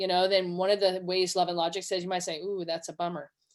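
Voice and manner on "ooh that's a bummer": empathetic, much quieter. Demonstrating what to say when a child's choice goes poorly, with empathy. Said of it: "And you say it with empathy".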